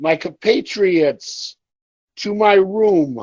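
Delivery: resonant, booming voice, "room" drawn out. Voicing a character calling his allies to him: booming voice. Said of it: "as his voice starts booming".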